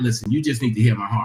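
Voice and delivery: gentle, steady, calm, loving and clear delivery. Showing how to say you need them to hear your heart: calm, loving and clear. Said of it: "you want to say that real calm, real loving, real clear".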